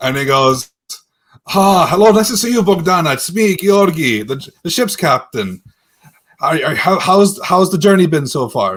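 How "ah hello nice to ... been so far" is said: terrified voice, stammering and tripping over words. Voicing a ship's captain greeting a passenger: terrified ship's captain. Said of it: "he's a bit terrified of you".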